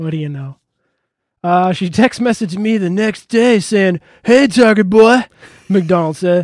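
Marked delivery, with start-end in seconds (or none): 4.2-5.2 rough, high, loud attempted Texas accent. Speaker quotes a woman's text message greeting: attempted texas accent. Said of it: "I don't know if I can really do a Texas accent".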